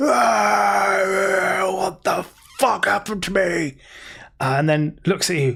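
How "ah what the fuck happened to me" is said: high, drawn-out pained scream trailing into words. Voicing a guard whose face contorts in pain: screaming in pain. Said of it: "the remainder of a scream still trying to come out".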